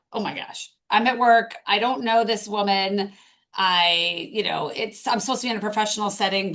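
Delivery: ordinary talk, nothing marked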